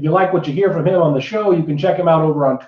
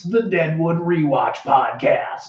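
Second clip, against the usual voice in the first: slow, drawn-out, dramatic trailer voice. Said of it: "I'm gonna do the whole thing in this voice".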